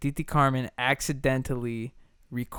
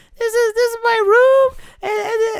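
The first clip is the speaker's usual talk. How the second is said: put-on very high-pitched, loud little-kid voice; 11 dB louder than usual. Describing old home tapes, mimicking own younger self in a really high-pitched voice. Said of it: "really high pitched voice [name]".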